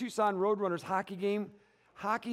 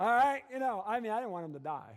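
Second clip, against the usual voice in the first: normal talking voice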